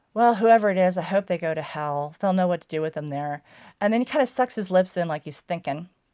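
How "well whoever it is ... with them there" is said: put-on flat, deadpan delivery. Describing a scene, giving Simon's reply to the detective, retelling Simon's deadpan line. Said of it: "Simon just just totally deadpan".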